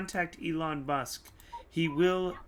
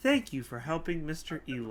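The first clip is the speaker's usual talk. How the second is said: recorded, automated woman announcer voice. Voicing a robotic platform that sounds like the announcements woman. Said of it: "it sounds like the woman from, uh, these announcements".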